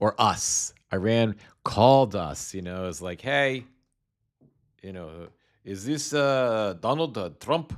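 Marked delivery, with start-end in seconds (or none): 3.2-7.7 bad, clearly fake Iranian accent. Acting out Iran phoning the US, in a bad Iranian accent. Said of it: "I can't do a good Iranian accent".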